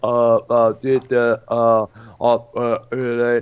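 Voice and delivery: very slow, drawn-out, halting, stuck stammer. Showing how another person imitates the speaker: imitating a mocking stutter. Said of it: "tries to imitate me, he's like".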